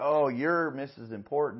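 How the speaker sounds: angry, mocking sarcasm, loud and slow. Retelling cutting-in driver scene, reenacting own angry sarcastic remark. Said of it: "I did it in an angry way".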